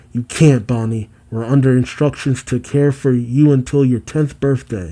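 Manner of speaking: ordinary delivery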